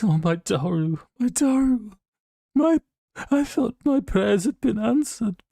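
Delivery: very high, blubbering, sobbing voice. Voicing a character who breaks down over his son: blubbering. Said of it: "just a blubbering mess".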